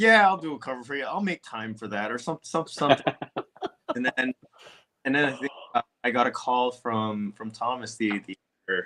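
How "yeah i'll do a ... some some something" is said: put-on, pointedly sarcastic tone. Guest recalls answering a direct message, retelling a sarcastic reply. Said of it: "I was pretty sarcastic on the D M".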